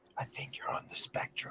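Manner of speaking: whispered, barely voiced, very quiet. Telling a story, the speaker repeats what a woman across the way whispered: retelling a whisper. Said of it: "She whispers".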